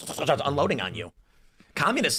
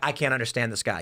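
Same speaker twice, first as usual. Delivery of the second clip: plain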